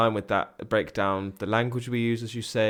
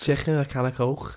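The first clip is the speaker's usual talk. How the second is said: Scouse Liverpool accent; 4 semitones higher than usual. On a podcast, a host shows off a Scouse accent. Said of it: "I'm pretty good at a Scouser accent".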